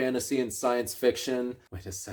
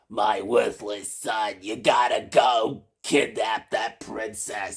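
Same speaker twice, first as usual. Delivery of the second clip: bossy, overbearing goblin mother voice; 2 semitones lower than usual. Guessing how the Goblin Prince's overbearing mother sounds: imitating overbearing goblin mother. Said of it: "it's probably like".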